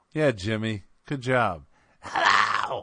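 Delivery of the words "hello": whispered, breathy mock female voice. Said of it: "Can't you tell by my voice?".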